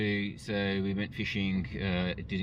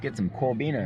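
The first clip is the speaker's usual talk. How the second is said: casual put-on American accent; 4 semitones higher, 3 dB louder than usual. Out fishing with coffees, hoping to catch corbina, in a put-on american accent. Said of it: "How do you like my American accent?".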